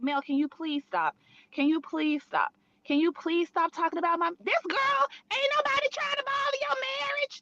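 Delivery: put-on begging plea, repeated over and over. Retelling a reality show scene, imitating Tisha pleading. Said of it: "Tisha was pleading with her, like".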